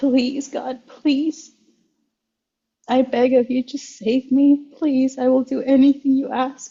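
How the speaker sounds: acted tearful, begging voice, through tears. Recalling crying in the bathroom and begging God for help: retelling a tearful plea. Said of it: "I'm in tears and I'm like".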